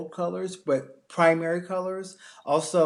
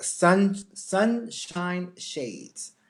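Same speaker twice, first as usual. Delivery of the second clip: really slow, deliberate, each word drawn out with care. Naming a color trend, the speaker says it really slowly. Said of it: "I have to say that really slowly".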